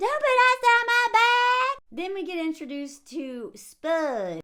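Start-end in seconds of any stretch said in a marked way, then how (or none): 0.0-1.8 very high, loud, stressed-out shrieking scream. Retelling a prank scene from a show: imitating someone screaming. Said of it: "She screams".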